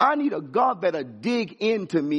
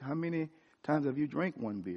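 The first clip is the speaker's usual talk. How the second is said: put-on tender voice, much quieter, lower pitch; 4 semitones lower, 11 dB quieter than usual. Retelling a conversation with God, who answers the question: God's small, tender voice. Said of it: "With a small, tender voice".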